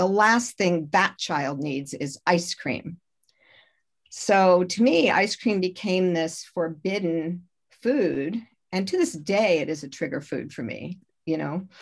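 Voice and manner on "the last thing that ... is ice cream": ordinary delivery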